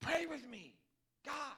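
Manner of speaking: very loud, high, slow near-yell through the teeth. Acting out his plea to pray with him: imitating near-yelling. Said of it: "he's almost yelling".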